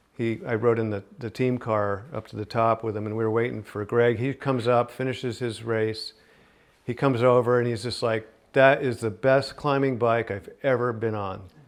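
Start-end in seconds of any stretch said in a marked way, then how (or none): none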